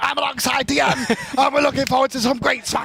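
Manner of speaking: early broadcast-style announcer opening voice. Imitating the other caster's first intro: imitating a co-host's first intro. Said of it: "I remember that one".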